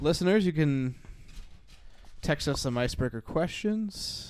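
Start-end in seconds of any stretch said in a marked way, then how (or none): 2.2-4.3 very slow, drawn-out delivery. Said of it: "I am talking very slowly".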